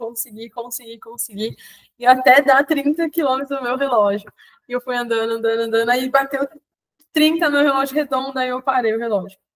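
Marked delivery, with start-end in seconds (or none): 0.0-1.6 mock hushed, very quiet weeping in floods of tears. Retelling reaching the finish of a long run: imitating own sobbing. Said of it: "aos prantos".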